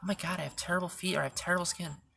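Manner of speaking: plain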